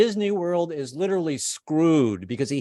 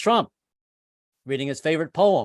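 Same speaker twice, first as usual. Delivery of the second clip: plain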